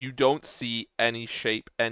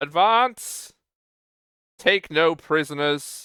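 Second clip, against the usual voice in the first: loud, high-pitched, commanding shout; 5 semitones higher, 6 dB louder than usual. In a story scene, a king gives orders while shouting over a storm. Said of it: "shouting over the sound of the storm".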